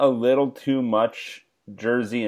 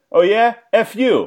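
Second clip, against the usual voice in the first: put-on broad New Jersey accent, very high, loud and slow; 11 semitones higher, 8 dB louder than usual. Retelling a stranger in front who turned around and snapped back, heavy Jersey accent. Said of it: "in like this like heavy Jersey accent".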